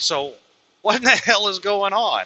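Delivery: nice, calm, soothing, slightly high tone. Speaker retells trying to de-escalate with the supervisor, retelling speaking in a calm voice. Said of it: "talking in a nice, calm voice".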